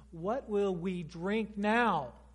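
sarcastic, resentful, angry, accusing tone. Demonstrating the wrong way to voice a complaint, in an accusing, angry tone. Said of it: "to use an accusing and angry tone".

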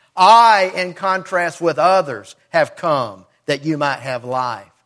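heavy emphasis on the word I. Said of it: "it's there for emphasis".

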